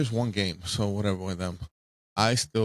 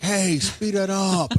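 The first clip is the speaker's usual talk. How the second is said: put-on yell, higher and louder; 11 semitones higher, 5 dB louder than usual. Acting out yelling at time-wasting players: imitating someone yelling. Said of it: "Yelling like".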